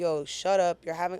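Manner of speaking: ordinary talk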